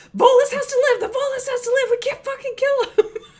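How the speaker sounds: very high, loud, in-character screaming. Screaming over comms at Drax while running: screaming in character. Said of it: "I'm screaming over comms at Drax".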